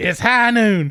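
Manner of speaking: put-on gravelly cowboy voice. Doing voices for a second take, a speaker tries a cowboy voice. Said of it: "You got to put the gravel on it".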